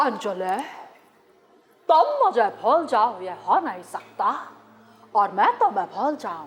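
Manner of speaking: deep, low, film leading-man voice. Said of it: "Sunil Shetty की mimicry आप लोगों की पेशे खिदमत है".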